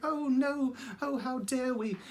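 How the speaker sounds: gentle, high little voice. Doing voices from a Wind in the Willows series: soft-spoken Mole voice. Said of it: "he's very soft-spoken and just like".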